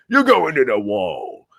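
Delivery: very loud, fumbling, poorly done north-east English accent. Showing how they struggle with a northern uk accent: struggling northern english accent.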